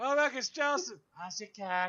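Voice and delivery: very high, loud, shrill woman's voice. Acting out how she greets everyone when she sits down: imitating her. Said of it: "you do that pretty good".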